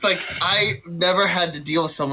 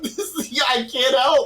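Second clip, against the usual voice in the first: high, giggly words breaking into laughter; 7 semitones higher than usual. Playing a character who can't stop laughing at a stalker: laughing while talking. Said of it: "just laughing like".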